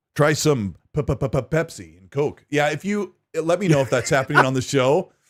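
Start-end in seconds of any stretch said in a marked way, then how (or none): 0.1-2.4 really bad TV host voice, drawn out slow. Doing a show on Discord and joking around: bad Back to the Future II impression. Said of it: "that was a really bad impression".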